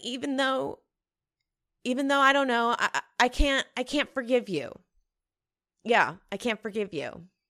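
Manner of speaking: tearful, faltering speech while crying. Retelling a scene of a phone call to a dad, crying while talking. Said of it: "I'm fucking crying talking about it".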